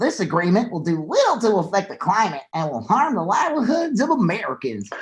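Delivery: mocking politician voice, formal prepared-statement delivery. Speaker performs a quoted statement aloud, doing the Ted Cruz voice. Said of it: "I'm doing the Ted Cruz voice".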